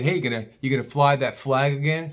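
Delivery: heavy, needling sarcasm. Retelling what a neighbor down the street asked: imitating a sarcastic question. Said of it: "Real sarcastic".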